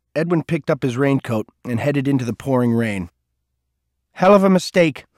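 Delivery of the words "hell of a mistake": raised, high-pitched calling voice. Edwin calls back to Cole while heading out into the rain: called back. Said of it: "he called back".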